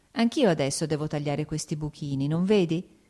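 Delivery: ordinary delivery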